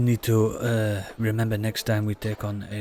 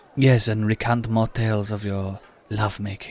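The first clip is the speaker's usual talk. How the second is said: put-on French accent; 3 dB louder than usual. Playing a character in a tabletop game, put-on French accent. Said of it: "Why does it sound so creepy when you say it in that accent?".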